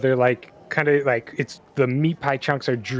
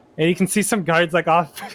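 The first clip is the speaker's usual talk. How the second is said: usual speaking voice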